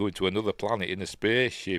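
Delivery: plain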